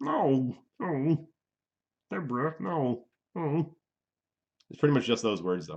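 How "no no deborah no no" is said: very slow, drawn-out voice, every word dragged. Showing an okay Ray Romano impression. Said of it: "My Ray Romano is okay".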